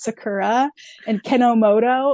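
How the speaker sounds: exaggerated American accent. Describing how they voiced a blond American character, heavy American accent. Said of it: "really like pound in the American accent".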